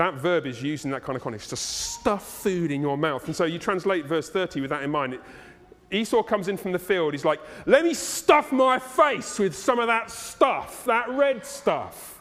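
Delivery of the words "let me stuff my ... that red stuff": uncouth, pitched-up put-on Cockney accent. Paraphrasing a Bible verse, voicing Esau coming in from the field in a Cockney accent. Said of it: "In a Cockney accent".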